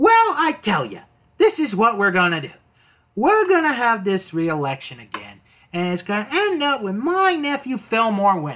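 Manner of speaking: put-on celebrity voice done badly, with swooping pitch. Retelling a cartoon scene, Rosie O'Donnell explains the plan: bad Rosie O'Donnell impression. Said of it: "I can't really do a good Rosie impression".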